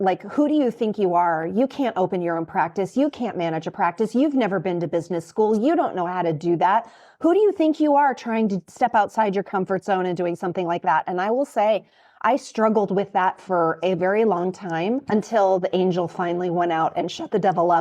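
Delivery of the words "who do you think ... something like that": plain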